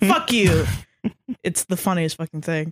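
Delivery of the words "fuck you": play-acted, defiant, comedic shout. Retelling a comedian's bit about buying hats: imitating Pete Holmes yelling. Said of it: "I just like comics who yell at me".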